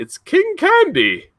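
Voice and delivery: very high-pitched cartoon villain voice. Announcing a quiz answer in a King Candy impression. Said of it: "That was my King Candy impression".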